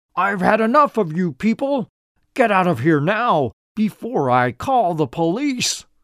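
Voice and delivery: angry, menacing, high-pitched shout. Narrator reads an old man ordering two visitors out: shouting. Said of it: "shouted the old man".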